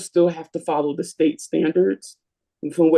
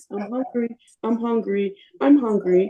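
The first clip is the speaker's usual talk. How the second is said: put-on small girl's voice, about eight years old; 5 semitones higher than usual. Retelling a car ride where a girl kept repeating herself, little eight-year-old voice. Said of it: "in her little eight year old voice".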